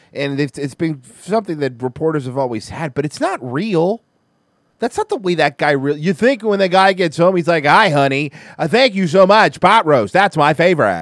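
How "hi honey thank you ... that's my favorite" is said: mock reporter voice, louder, slower. Mocking how a reporter would talk when he gets home, in a reporter's voice. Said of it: "nobody that talks like that".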